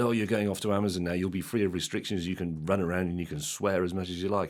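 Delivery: normal talking voice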